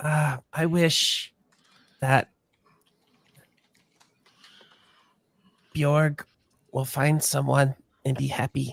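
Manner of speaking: soft, hushed half-whisper under the breath. Voicing a character making a secret wish aloud: half-whispering a wish. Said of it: "she just kind of whispered".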